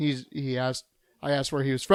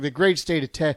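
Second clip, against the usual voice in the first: ordinary delivery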